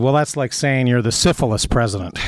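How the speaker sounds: ordinary delivery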